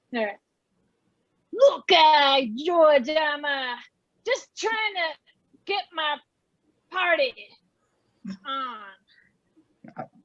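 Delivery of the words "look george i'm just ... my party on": put-on Jersey accent. In a letter game scene, talking to George, in a New Jersey accent. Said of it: "In a New Jersey accent".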